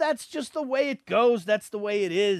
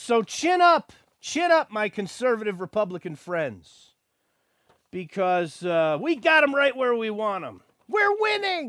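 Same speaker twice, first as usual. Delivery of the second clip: heavy sarcasm, plainly ironic, swooping sing-song. Addressing your conservative Republican friends after making your point about politics, sarcastic. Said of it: "Now that's sarcasm".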